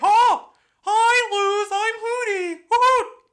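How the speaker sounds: cartoonish voice, high and stretched. Retelling how a cartoon owl's voice came about: Hootie voice. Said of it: "did a funny Mickey Mouse impersonation for Hootie".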